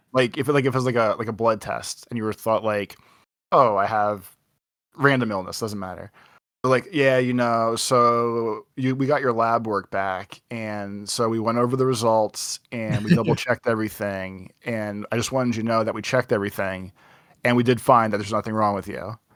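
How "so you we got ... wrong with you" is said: normal talking voice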